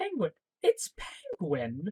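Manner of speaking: put-on pleasant, unbothered, soft sing-song voice. Describing a scene where a call comes in, retelling Gordon's pleasant tone. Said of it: "he sounds so pleasant as he says it".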